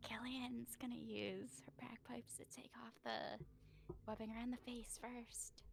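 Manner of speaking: high, hushed whisper. Describing a character's out-of-character action in the game: whispering. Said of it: "I love how you're whispering the out of character actions".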